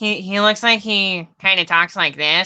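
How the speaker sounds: slightly nasal voice, a bit through the nose. Describing how a man talks, demonstrating by talking out of the nose. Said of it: "like out of his nose a little bit".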